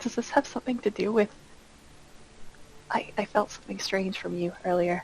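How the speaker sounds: hushed, acted whisper. Speaking in character to another character during the game: whispering in character. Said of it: "I'm gonna whisper to Goaty".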